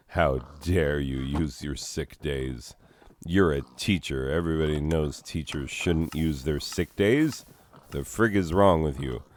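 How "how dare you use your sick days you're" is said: plain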